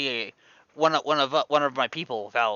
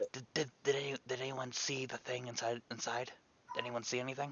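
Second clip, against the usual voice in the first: hushed whisper; 17 dB quieter than usual. In a game campaign, a player's character whispers to Delilah. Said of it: "I whispered in her".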